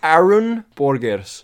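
put-on Portuguese accent. Saying a listener's dutch name aloud: portuguese accent.

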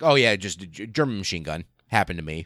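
super casual, nonchalant, offhand tone. Retelling the officer's reply about his wound: imitating a super casual tone. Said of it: "super casual".

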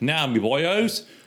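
Australian-accented speech. Trying a character accent that comes out as an australian accent. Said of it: "That's Australian".

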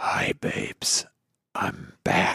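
creepy, breathy creeper's whisper. Asked by friends to say a line like a creeper, creepy creeper voice. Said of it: "You do it like a creeper".

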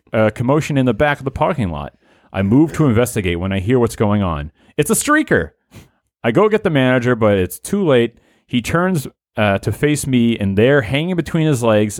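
ordinary delivery

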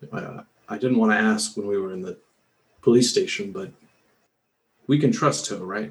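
discreet, private aside. Voicing a character quietly asking two companions out of earshot: said under his breath. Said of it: "and just under his breath".

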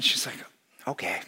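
ordinary talk

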